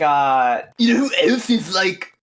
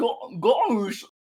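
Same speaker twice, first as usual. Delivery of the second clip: dopey cartoon dog voice, quieter; 7 dB quieter than usual. Asked to do Mickey, the speaker's attempt comes out as a Goofy voice. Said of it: "That's still Goofy".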